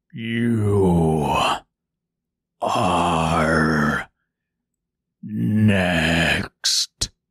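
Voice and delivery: very low, deep, chilling voice, drawn-out "you". A tree turning to face the scarecrow after dropping the woman, deep, chilling voice. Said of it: "it said in a deep, chilling voice".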